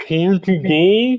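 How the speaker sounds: high, muffled voice, talking around a mouthful. A voice in your head asks this through a mouthful, muffled because of food. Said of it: "in a muffled voice because of food".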